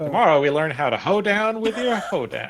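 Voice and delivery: put-on folksy country accent. Voicing a character after being asked for a farmer's country accent: country accent. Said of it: "put on, like, a country accent?".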